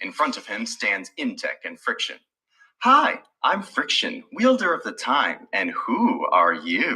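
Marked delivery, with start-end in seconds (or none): 2.8-7.0 coy, flirtatious, sing-song and drawn out. A character introduces herself and asks a stranger who he is, flirtatious. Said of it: "She says in a flirtatious voice".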